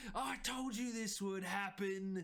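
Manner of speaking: loud yelling. Voicing a character yelling over his shoulder at his sister: character yelling. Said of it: "yells over the, his shoulder".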